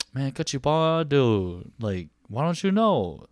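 slow, lecturing dad voice. Speaker tells a friend how their dad lectures, imitating dad lecturing. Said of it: "when he lectures you, he'll be like".

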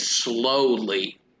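the word "slowly" strongly stressed. Retelling a villain's order in an imagined scene: stress on slowly. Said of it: "emphasis on slowly".

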